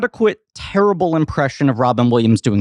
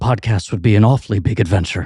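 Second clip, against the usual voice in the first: terrible Scottish accent, dropping to lower pitch; 5 semitones lower than usual. Podcast host, after demanding a co-host's best, doing a terrible Robin Williams impression. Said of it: "Why are you Scottish?".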